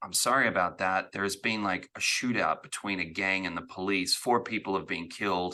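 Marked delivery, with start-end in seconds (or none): none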